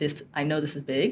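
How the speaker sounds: normal talking voice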